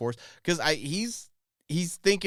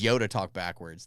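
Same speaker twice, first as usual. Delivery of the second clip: plain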